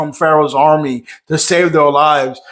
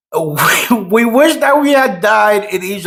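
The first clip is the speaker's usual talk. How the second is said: amused, laugh-laced, laughing through the words; 4 semitones higher than usual. Quoting a Bible passage aloud and finding it funny: laughing while speaking. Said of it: "I'm sorry for laughing".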